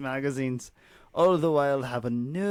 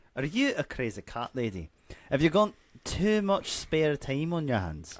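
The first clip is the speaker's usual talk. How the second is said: put-on Scottish accent throughout. Taking over the bit after being told 'take it away', in a scottish accent. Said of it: "Take it away, you Scotsman".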